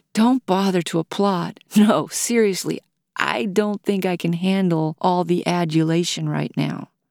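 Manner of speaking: plain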